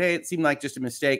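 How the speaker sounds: ordinary delivery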